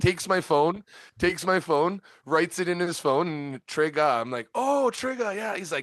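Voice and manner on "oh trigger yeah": put-on goofy, dorky Canadian accent, pitched very high. Retelling meeting Trigger, repeating own words: imitating own dorky Canadian accent. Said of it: "my dorky ass Canadian accent".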